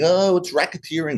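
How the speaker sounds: high, mock shrieking, screaming insistence. Imagining what Nancy would say, imitating her screaming. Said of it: "she'd be screaming at me and saying".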